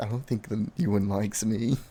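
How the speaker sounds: quiet whispered aside. In a roleplay scene, a character speaks to a companion, whispering aside. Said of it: "She kind of whispers to Hale".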